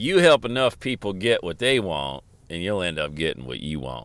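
put-on Southern accent. A speaker recalls practicing talking like Zig Ziglar, Zig Ziglar impression. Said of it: "try to talk like you got a Southern accent".

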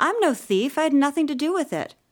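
indignant, very high-pitched, loud protest. Asked by Lavilla if this abets a crime, the narrator answers: indignant. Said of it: "I said indignantly".

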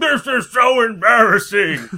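loud, high clichéd fat-woman voice. Retelling a story a man told about a woman, clichéd fat woman voice. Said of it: "having the cliched fat woman voice".

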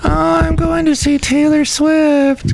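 very high-pitched put-on pop-concert fan voice. Discussing concertgoers who see psychologists, doing an impression of a typical [name] concert goer. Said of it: "That's my impression of the typical [name] concert goer".

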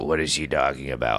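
very low, froggy, croaky morning voice. Retelling a movie scene where a character wakes up: Martin Short morning voice. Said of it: "he wakes up in the morning and goes".

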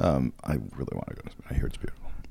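soft, unvoiced whisper. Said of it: "whispered aside about Spain".

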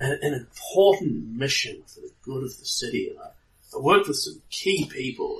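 confiding, secretive delivery. Voicing a character who is showing off, in a lowered, hushed voice. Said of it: "he sort of lowers his voice".

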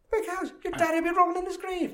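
mock astonishment with rising pitch. Retelling a film scene, quoting the character: imitating Samuel L. Jackson, voice rising higher. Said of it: "his voice is getting higher and higher".

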